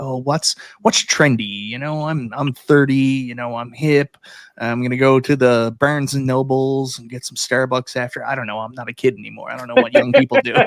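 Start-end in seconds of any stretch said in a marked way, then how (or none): 0.0-8.2 mocking, out-of-touch, clueless-sounding voice. Mocking retailers who only care what is trendy: imitating a trendy retailer. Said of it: "They're like".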